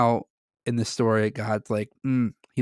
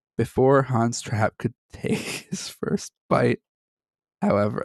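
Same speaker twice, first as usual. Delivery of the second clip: talking through laughter. Telling a grim folk tale and unable to stop laughing: laughing while talking. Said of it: "I don't know why I'm laughing".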